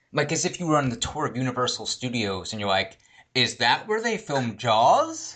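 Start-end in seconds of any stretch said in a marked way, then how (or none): 3.3-5.3 flat, detached speech. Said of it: "like, completely detached".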